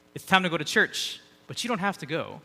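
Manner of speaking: heavily sarcastic tone, dripping with sarcasm. Recounting a woman waking him and his brother for church, retelling a sarcastic remark. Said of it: "very sarcastically".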